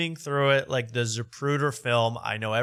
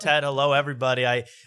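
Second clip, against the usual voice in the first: usual speaking voice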